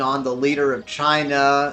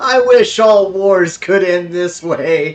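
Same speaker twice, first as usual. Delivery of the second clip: very jubilant, loud, slow, beaming with joy. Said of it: "he says in a very jubilant voice".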